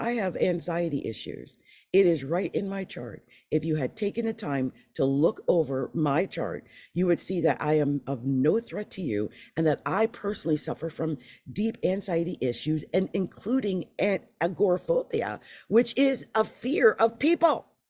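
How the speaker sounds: plain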